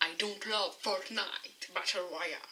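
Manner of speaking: showy, put-on English accent. French-speaking streamer switching into English for one line: English accent. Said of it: "Vous avez vu mon accent anglais".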